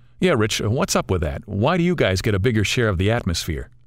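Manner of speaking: plain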